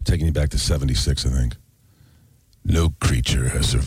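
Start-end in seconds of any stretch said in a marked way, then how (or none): 2.6-3.9 much lower movie trailer narrator voice. Offering to show the guys a trailer voice, in a movie trailer voice. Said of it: "You want to hear a trailer voice".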